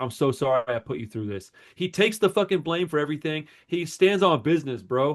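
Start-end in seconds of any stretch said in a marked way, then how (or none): 0.0-1.5 sobbing, tearful, broken-down crying voice. Retelling how he runs in and starts crying: imitating someone crying. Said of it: "and he starts crying".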